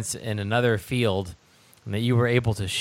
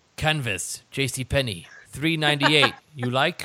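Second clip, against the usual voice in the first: put-on old karate master character voice; 3 semitones higher than usual. Quoting a movie karate master's line about his belt: Mister Miyagi impression. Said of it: "that was my Mister Miyagi impression".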